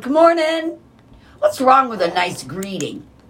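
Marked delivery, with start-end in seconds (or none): 0.0-0.8 high, bright, friendly tone. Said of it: "you see someone".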